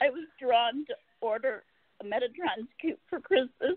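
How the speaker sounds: tearful voice, speaking through tears.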